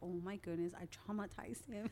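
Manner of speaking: usual speaking voice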